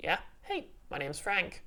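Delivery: swooping giant space hamster character voice. Voicing a talking hamster who greets a player: voicing a giant space hamster. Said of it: "he looks back at you and says".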